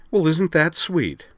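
very high, loud, sarcastic and sardonic jab. A woman answers someone who says they were concerned about her: sardonic. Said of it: "said Liza sardonically".

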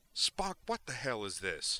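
insistent, blunt, demanding delivery. Just after beaming into a house, a doctor turns to his companion, demanding. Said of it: "he demanded".

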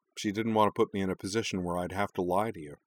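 ordinary delivery

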